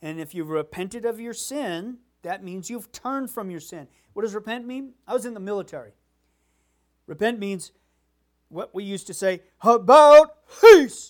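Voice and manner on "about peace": very loud, high, barked drill-style shout. Former soldier explains repentance by demonstrating a military command, shouting it. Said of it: "sorry for yelling that in the speakers".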